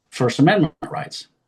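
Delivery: normal talking voice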